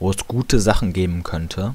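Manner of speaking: stress on könnte.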